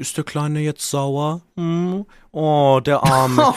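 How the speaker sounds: loud, sneering, mocking baby talk. Imitating someone talking to him like a child mid-argument, mocking baby voice. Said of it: "mit so einer Babystimme mit mir redet".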